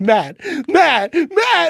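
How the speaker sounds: mock frantic, loud, high-pitched repeated calling. Speaker retells a hologram reveal, calling someone's name: retelling own freak-out. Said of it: "And I start freaking out".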